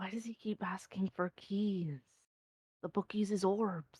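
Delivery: whispering. A player's character leans in toward another character, whispering. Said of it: "just whisper".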